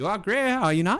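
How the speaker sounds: small, piping, very high-pitched tiny voice. As the voice from inside the box, the storyteller speaks in a small voice. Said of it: "as a small voice begins to pick up".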